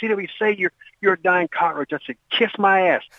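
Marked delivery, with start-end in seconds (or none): 0.0-1.9 harsh, screamed drill sergeant yelling. Retelling how the sergeant screamed at you, imitating someone screaming. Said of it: "He was like screaming at me".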